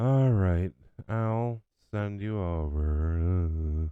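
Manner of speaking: mock machine voice with attitude, very slow drawl. Caller retelling the pharmacy phone computer after pressing zero, imitating computer with an attitude. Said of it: "the computer it gets an attitude and it goes".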